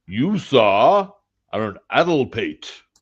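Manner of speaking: loud, full, drawn-out Southern gentleman drawl. Trying out the word 'addlepate' in a full Southern gentleman voice. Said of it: "the full uh, Southern gentleman voice".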